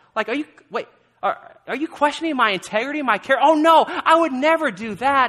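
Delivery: high, loud, annoyed, snapped back.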